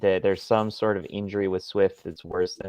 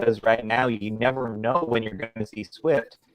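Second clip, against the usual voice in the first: ordinary talk, nothing marked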